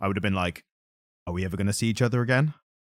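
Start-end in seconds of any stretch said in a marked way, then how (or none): 1.3-2.5 worried, caring, anxious tone. Showing how they'd do the line reading as an actor, worried, caring tone. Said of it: "Like a very like worried like friend".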